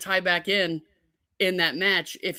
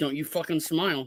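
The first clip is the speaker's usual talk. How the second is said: quieter mutter under the breath; 3 semitones lower, 3 dB quieter than usual. Recounting what she said under her breath, retelling an under-breath mutter. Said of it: "under her breath, says to me".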